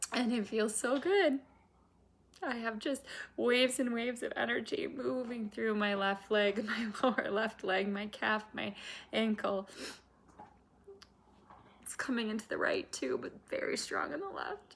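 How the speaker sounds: speaking through tears. Speaker describing what they feel right now, crying while speaking. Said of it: "I feel it so much I'm crying right now".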